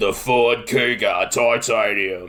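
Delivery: low, slow, deep gravelly ad voice-over. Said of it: "deep, gravelly voice".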